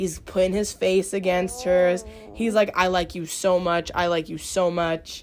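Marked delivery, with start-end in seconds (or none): 2.8-5.2 mock whispered delivery. Retelling how a man talks to a girl in a room: imitating a whisper. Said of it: "And, like, whispering".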